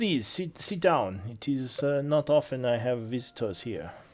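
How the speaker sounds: put-on French-accented character voice. Voicing a workshop owner inviting visitors to sit: French accent. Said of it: "the D M can do a French accent".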